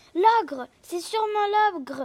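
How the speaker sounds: high, squeaky, tiny little elf voice. Narrator reads the elves crying out at the ogre's footsteps, squeaky elf voices. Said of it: "couinèrent les lutins".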